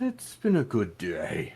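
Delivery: gross icky noise in put-on voice. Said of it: "you don't have to make that noise".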